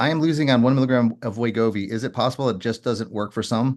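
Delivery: ordinary talk, nothing marked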